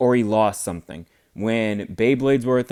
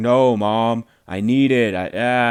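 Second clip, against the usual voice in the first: put-on dragged-out upset protest, very slow. Retelling someone's reaction when his mom refuses ice cream money: imitating someone freaking out. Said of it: "he started freaking out".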